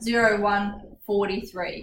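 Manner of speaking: "zero one, forty-three" read as digit pairs. Saying a time aloud in 24-hour format: digits grouped into pairs. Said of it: "I'm grouping it into like twos".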